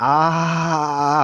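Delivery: high, near-yelled gasp on ah. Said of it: "breathing loud or almost yelling".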